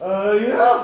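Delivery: squeaky, high-pitched reply with rising tune. Retelling own reply to a bigger boy: imitating own high-pitched questioning reply. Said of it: "answering the question with a question like an idiot high-pitched Jesus".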